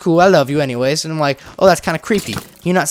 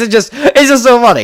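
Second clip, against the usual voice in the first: loud, high speech through helpless laughter; 6 semitones higher, 6 dB louder than usual. Admitting they can't keep a straight face: laughing while talking. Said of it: "I can't keep a straight face".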